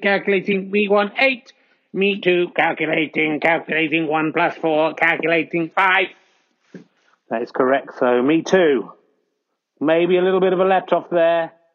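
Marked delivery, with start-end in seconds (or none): 0.0-6.0 robotic computer voice, much slower. A commentator reads out the score in a robot voice. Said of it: "What's the robot voice calculating?".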